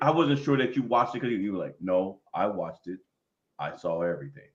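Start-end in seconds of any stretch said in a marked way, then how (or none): 1.8-4.3 acted, very low, slow, flat, menacing drone. Quoting what the other person had told them earlier, in a flat monotone. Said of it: "in like kind of like a flat monotone".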